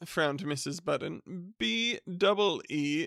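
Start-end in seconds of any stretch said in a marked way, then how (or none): none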